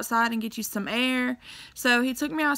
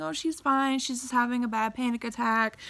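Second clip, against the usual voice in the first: ordinary talk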